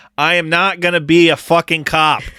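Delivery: put-on Boston accent. Quoting the line the speaker wanted to hear: Matt Damon Boston accent. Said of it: "glad that you guys are picking up the slack".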